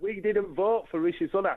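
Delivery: plain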